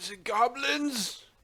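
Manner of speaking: very high, loud, put-on gadget voice. Teasing the dm by imitating his gadget voice. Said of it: "pulling out the gadget voice".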